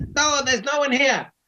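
squeaky, very high-pitched goblin voice. Narrating a game, an unseen goblin answers the players' call, in a goblin voice. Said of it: "you hear a goblin voice say".

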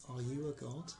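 deep otherworldly voice. Voicing a voice heard in a player's head: deep otherworldly voice. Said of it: "it's deep and otherworldly".

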